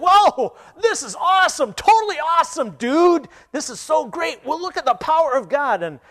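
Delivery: put-on very high, loud, all-worked-up young man's delight. Telling a story of a young man reading scripture on a park bench, acting out his excitement. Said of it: "he just started getting all excited".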